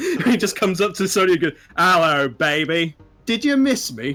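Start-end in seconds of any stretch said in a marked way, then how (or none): 1.8-4.1 put-on outrageous, over-the-top, laid-on Australian accent. Recalling Kano in the Mortal Kombat movie coming up to Sonya: Kano's outrageous Australian accent. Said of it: "Kano's outrageous accent".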